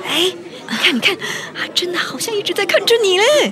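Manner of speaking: high, over-excited gush bursting with excitement. Acting a character talking to Lisi about someone on stage: over-excited. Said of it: "我太激动了".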